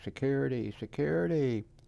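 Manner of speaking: high, loud scream.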